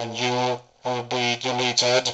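robotic, machine-like voice effect. Demonstrating a voice changer with the distortion dialed up, Cyberman voice. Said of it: "you should be able to hear the Cyberman voice".

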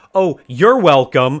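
very loud, high, sarcastic, sassy, acted-out yell. Retelling yelling at people who didn't say thank you, mock-sassy tone. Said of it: "like this really sassy tone".

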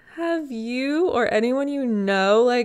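giggly, drawn-out speech. Starting an awkward question to listeners, the speaker breaks into giggling. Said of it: "sorry, I'm giggling".

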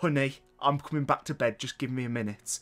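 ordinary delivery

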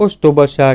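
comforting tone. The narrator answers someone who has turned away, maybe crying: consoling. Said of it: "mondtam vigasztalóan".

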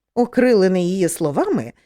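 ordinary delivery

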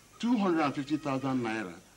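ordinary delivery

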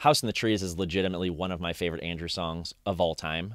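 usual speaking voice

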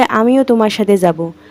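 plain reading voice

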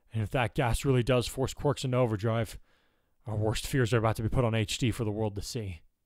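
plain

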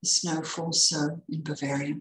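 ordinary delivery

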